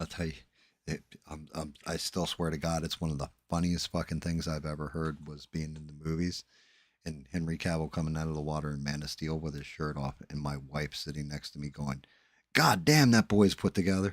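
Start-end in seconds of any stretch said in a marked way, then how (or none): 12.5-14.1 bold, unashamed, loud and proud delivery. Retelling what his wife said beside him in the movie theater, retelling a loud, proud remark. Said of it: "I mean like loud, proud, and stated".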